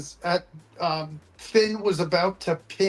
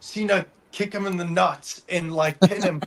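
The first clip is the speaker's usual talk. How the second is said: plain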